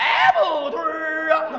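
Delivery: street vendor's hawking cry. Showing how vendors hawk apple-flavored candied haws: street vendor's hawking cry. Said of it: "这苹果味儿的怎么吆喝".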